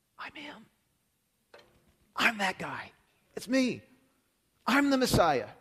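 slow, all-breath, hushed half-whisper. Retelling a scripture scene where Jesus reveals himself to the woman: half-whispering. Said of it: "And Jesus whispers, whispers to her".

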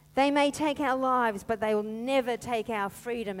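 ordinary delivery

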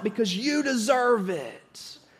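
slow, put-on kid voice calling out. Retelling a commercial where a kid answers: imitating a kid shouting. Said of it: "the kid shouts out".

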